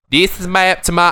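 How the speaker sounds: poor put-on Australian accent. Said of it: "I don't do a very".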